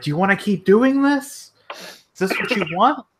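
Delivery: mock high yell. Recounting what she said to someone, retelling her yelling. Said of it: "she's like yelling".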